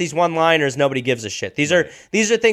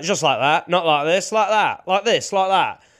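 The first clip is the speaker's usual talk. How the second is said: put-on, slightly drunk, tipsy-sounding patter. Imitating a comic's catchphrase: imitating a drunk-sounding catchphrase. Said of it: "So he'd just be like".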